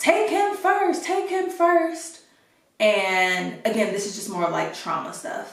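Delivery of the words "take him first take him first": shrill, frantic, high, loud pleading scream. Retelling begging hospital staff to treat another patient first: imitating own past screaming. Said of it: "I'm screaming to the lady".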